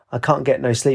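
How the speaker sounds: plain reading voice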